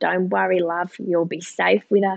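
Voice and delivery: put-on Australian accent, best attempt. Coming back from the port, quoting what Mozzie said, imitating Mozzie, Aussie accent. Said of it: "that's my best Aussie accent".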